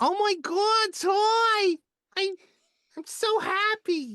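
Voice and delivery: very high, very loud, slow New Jersey accent. Speaker shows a favorite voice based on their New Jersey aunts: New Jersey aunt voice. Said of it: "do a voice that I love doing".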